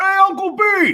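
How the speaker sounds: high, loud voice through a mouth full of food. Across the table, Atreus looks up and greets his uncle, talking with a mouthful of food. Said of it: "with a mouthful of food".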